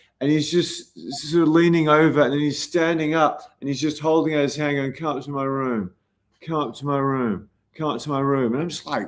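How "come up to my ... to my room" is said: put-on mimicked drunk man's voice. Retelling how a drunk man kept asking someone up: imitating drunk speech. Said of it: "you can't understand half the words he's saying 'cause he's drunk".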